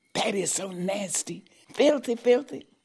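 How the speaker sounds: high-pitched hiss of disgust, up close. Retelling what a waitress said when the cigarettes came out, hissing. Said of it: "And she hissed".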